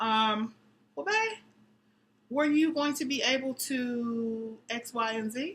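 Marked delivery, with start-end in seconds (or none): 1.0-5.5 gentle, polite, respectful tone with drawn-out "to". Showing how to ask a partner without nagging: tactful, respectful ask. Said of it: "Learn how to ask in a tactful, respectful way".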